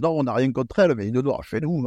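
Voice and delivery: put-on Southern drawl on the words. Quoting racist hunters who deny prejudice: imitating a Southern accent. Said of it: "Je te fais un accent du Sud".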